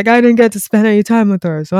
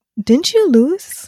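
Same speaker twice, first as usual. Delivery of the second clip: put-on sincere, honest tone, higher pitch; 7 semitones higher than usual. Retelling how a man reacted, quoting his question: imitating a genuine, honest question. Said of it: "like in an honest, sort of like genuine way".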